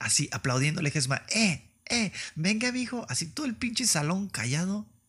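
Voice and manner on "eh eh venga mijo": put-on slow, high, drawn-out, rowdy drunken cheering holler. Retelling a party story, imitating a drunk aunt shouting encouragement. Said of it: "es la única que está gritando".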